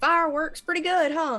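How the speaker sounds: put-on shouting, loud yell. Yelling in character during a fight after casting firebolt: in-character yell. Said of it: "I'll just yell".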